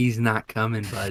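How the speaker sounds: whispering. Getting close to a crazed prisoner and whispering back to him: whisper. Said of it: "I'm gonna whisper back to him".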